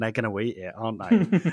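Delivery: low, mock talking through laughter. Retelling how the speaker's brother reacted to an episode, imitating someone laughing while talking. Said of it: "started laughing and going".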